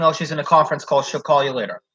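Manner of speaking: ordinary talk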